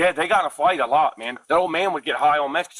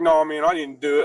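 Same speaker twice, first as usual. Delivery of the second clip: put-on sarcastic tone. Retelling his reaction when asked if he did it: imitating a sarcastic denial. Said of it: "You know when somebody's being sarcastic?".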